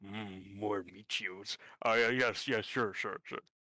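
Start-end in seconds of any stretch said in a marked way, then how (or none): 0.0-1.6 muttering under breath, much slower. A character taking notes on scripture in a dungeon, muttering under breath. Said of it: "Under his breath".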